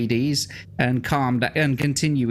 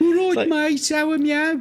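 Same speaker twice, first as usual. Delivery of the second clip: put-on Geordie accent, pitched higher; 13 semitones higher than usual. Imitating how a traveller from Tyneside talks: imitating a Tyneside accent.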